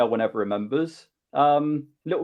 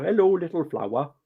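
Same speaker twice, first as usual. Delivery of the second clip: imitated Welsh accent; 2 semitones higher than usual. Recalling what the little swordfish guy used to say: welsh accent. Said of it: "Welsh accent all the time".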